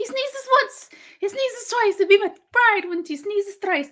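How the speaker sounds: bad, clumsy put-on leprechaun accent. Announcing the next review, quoting the film in a terrible Leprechaun accent. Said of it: "That accent was terrible".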